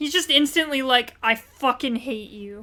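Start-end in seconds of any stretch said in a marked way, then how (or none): 1.2-2.6 put-on aggressive voice, lower and quieter. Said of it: "he's so, so aggressive".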